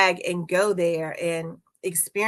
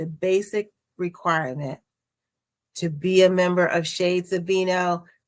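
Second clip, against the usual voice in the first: very slow, deliberate, word-by-word delivery. Stating the basic requirement to be a member, very slow delivery. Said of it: "I'm gonna say this really slowly".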